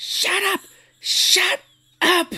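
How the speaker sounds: mock, very high, shrill screaming. Describing a favorite scene, the speaker acts out a woman yelling at a dying man, imitating someone screaming. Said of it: "she's screaming at him".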